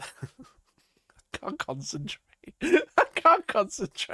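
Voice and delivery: talking through laughter. Talking to chat and unable to concentrate, laughing while talking. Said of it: "I'm just laughing".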